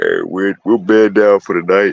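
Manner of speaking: talking through a yawn. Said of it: "Excuse me for yawning".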